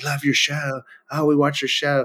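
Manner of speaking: half-whispered, hushed, under the breath. Retelling people at the Masters saying they love the show: imitating people half-whispering.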